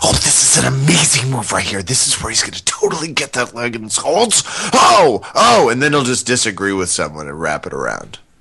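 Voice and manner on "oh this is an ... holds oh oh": forceful, aggressive half-whisper, violently rising pitch. Answering a viewer question, imitating a commentator: Henner Gracie aggressive half-whispering. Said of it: "the A K forty-seven of aggressive whispering".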